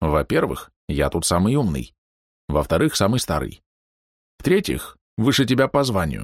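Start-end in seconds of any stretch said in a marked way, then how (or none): none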